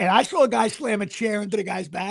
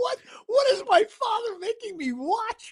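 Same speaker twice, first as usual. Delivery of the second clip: terrified and aghast, very high pitched, very slow, drawn out; 13 semitones higher than usual. Imitating a daughter watching wrestling with her father: imitating a terrified daughter. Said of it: "she looked terrorized".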